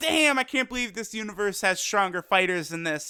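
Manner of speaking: normal talking voice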